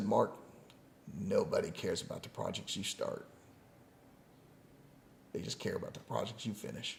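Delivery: soft, breathy, deep, hushed voice. Retelling what a man said to him, imitating a deep voice. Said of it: "He had this deep voice".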